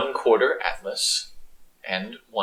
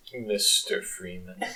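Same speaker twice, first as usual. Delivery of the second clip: quiet, rough, creaky put-on voice; 8 semitones higher, 6 dB quieter than usual. Voicing a dragon in a game, briefly channeling G-Man: G-Man voice. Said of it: "I'm channeling a little bit of G-Man".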